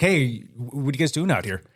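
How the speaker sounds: ordinary talk, nothing marked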